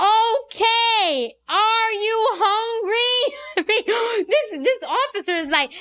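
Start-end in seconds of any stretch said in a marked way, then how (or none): 0.0-3.3 very slow, loud, every word overenunciated. Imitating how an elderly relative would speak to people with limited english, to show how it comes across. mimicking loud, slow, overenunciated speech. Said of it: "Who talks like this?".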